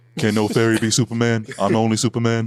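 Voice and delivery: put-on deep voice. Joking with others about a basketball player, doing a Shaq impression. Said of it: "he got that Shaq, you know, impression down to a T".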